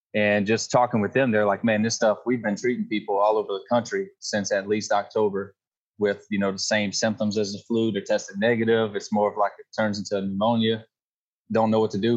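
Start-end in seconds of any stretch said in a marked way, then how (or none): none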